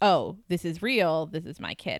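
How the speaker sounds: plain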